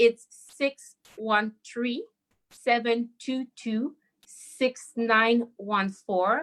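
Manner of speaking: deliberate, slow, careful, one-at-a-time delivery. Giving the number of a crisis line, saying it slowly. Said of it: "to say it slowly".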